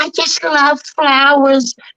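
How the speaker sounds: put-on high, cute cartoon-style girl voice. Recalling doing all the Smurfs at school, the speaker does a Smurfette voice. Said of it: "So I was doing uh Smurfette".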